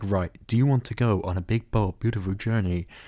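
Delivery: put-on artificial navigation voice. Describing a film where a rental car's sat-nav talks to them, in a HAL-like sat-nav voice. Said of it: "this smart A I that's like".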